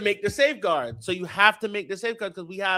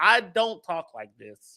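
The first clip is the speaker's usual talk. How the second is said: ordinary talk, nothing marked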